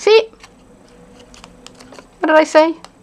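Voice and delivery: high, loud, stern teacher voice. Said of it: "I have to use my teacher voice".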